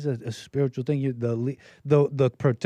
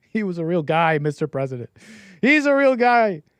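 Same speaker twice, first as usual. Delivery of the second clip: choked-up, voice catching, pitched up and loud; 5 semitones higher, 6 dB louder than usual. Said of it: "Sorry, I get emotional".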